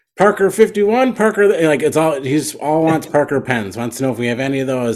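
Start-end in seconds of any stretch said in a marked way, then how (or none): 0.2-1.5 very high-pitched, loud shouted call. Retelling a guy in the street calling out at a rummage sale: imitating a man shouting. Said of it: "he's just shouting out".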